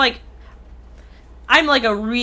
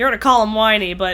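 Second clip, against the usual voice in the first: normal talking voice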